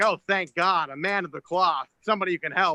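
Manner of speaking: put-on, acted excited goat voice. Acting out a goat who meets a priest on the road: acting out an excited goat. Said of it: "he gets all excited 'cause he's like".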